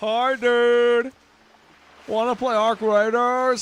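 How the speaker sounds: bad, high, nasal, loud voice. Speaker acting out how a certain guy sounds, imitating how he sounds. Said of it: "That's probably how he sounds".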